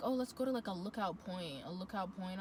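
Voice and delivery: plain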